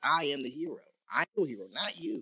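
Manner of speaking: ordinary talk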